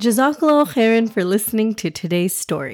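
plain

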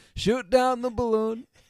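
belted out loud and high. Reading a social media post aloud after being asked to: Trump voice. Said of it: "I think you know the voice".

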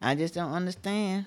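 ordinary talk

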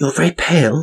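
weeping gasp, muffled, very high. Reading a novel, one woman speaks to another, gasping, muffled. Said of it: "she gasped out, her mouth muffled".

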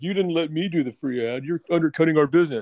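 put-on angry voice. Imitating the podcast host who is mad at them: imitating Jeff being mad. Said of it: "he's all, like, mad at us now. He's like".

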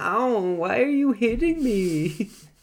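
put-on Swedish accent, very high-pitched and slow. Quoting a movie character while discussing the film: put-on Swedish accent. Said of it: "I just pictured him with a Swedish accent".

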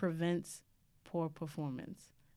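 drawn out slowly. Speaker quotes a cousin's advice from returning from england, very slow. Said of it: "I have to say that slow".

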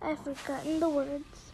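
usual speaking voice

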